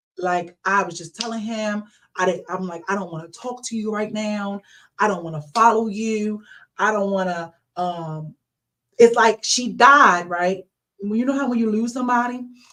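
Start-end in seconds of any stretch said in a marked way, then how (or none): none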